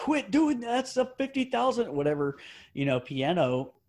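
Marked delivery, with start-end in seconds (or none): 0.0-1.9 high-pitched, scolding yell. Telling a story about a piano, the speaker imitates someone yelling at a player, retelling a yell. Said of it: "yelling at him like".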